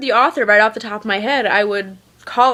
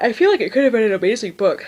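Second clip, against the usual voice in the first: talking through a yawn, faster pace. Speaker giving their opinion of a book, yawning while talking. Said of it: "Sorry, I'm yawning".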